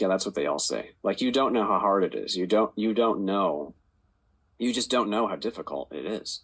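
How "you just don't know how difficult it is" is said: normal talking voice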